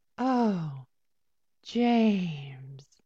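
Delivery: loud, breathy sigh out on the breath. Leading a group to say a line like a Bond girl: breathy, sighing delivery. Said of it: "say it with me. Brings in her breath and sighs".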